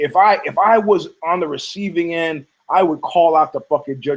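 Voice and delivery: ordinary talk, nothing marked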